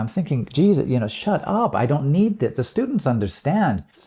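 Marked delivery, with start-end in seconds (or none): none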